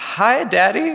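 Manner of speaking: put-on tiny, high, small-child toddler voice. A father retells his child speaking up during a diaper change: tiny child's voice. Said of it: "I hear this tiny voice say".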